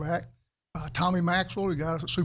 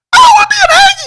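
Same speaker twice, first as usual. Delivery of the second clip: acted voice cracking, higher and louder; 22 dB louder than usual. Retelling answering a coach about which school he wants: imitating own voice breaking. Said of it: "My voice just broke".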